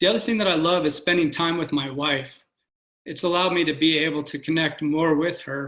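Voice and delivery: moved and sincere, feelings audibly rising. Speaker talks about spending time with his wife, getting emotional. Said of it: "I'm getting emotional here".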